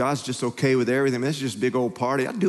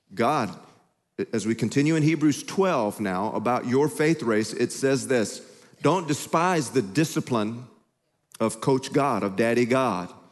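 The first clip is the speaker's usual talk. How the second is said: ordinary talk, nothing marked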